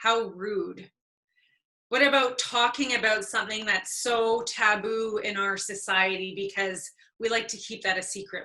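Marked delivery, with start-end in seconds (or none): 0.0-0.9 put-on, heavy, laid-on sarcastic tone. Speaker voicing an imagined reaction to someone asking questions, mock sarcastic. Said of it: "recognize the sarcasm in these statements".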